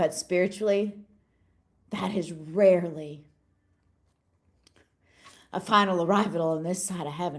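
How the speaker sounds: getting choked up with emotion. Speaker addresses listeners this morning: getting choked up. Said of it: "I'm sorry I'm getting choked up this morning".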